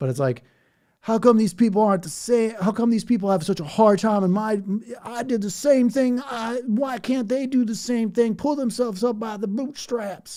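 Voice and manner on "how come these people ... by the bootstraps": mock Southern drawl, higher and louder. Imitating an older unhappy person complaining about younger people: put-on Southern accent. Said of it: "Sorry if I do the Southern accent".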